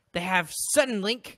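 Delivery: loud, high, heavily sarcastic tone.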